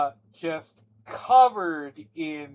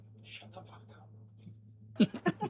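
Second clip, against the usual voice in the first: faint, very quiet whisper, barely voiced; 6 semitones higher, 12 dB quieter than usual. Describing a spell's illusion to the players, voicing it as a whispered voice. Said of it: "you hear a whisper on the wind".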